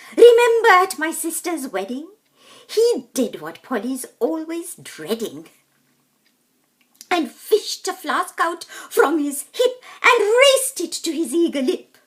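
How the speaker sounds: high-pitched, gossipy chatter. In a rhyming story, Brunella phones Harriet with the latest news, gossiping as Brunella. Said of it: "[name] here. Have you heard the latest, dear? I talked to [name] in the park. We walk the dogs there after dark. / [name] here".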